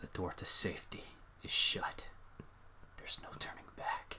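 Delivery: very quiet, eerie, barely voiced whisper. Playing a scary game and reading the screen aloud: whispering. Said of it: "Why are you whispering?".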